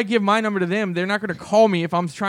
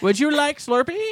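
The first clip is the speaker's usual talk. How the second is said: put-on Indian accent, pitched up; 7 semitones higher than usual. Mocking how people fake accents when they order, in a fake indian accent. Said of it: "try to fake the Indian accent".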